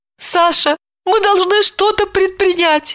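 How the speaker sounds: pitiful, plaintive, very high pleading squeak. A sobbing woman, being soothed by a man, speaks to him: plaintive squeak. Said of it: "жалобно пропищала она".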